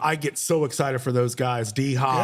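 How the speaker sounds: ordinary talk, nothing marked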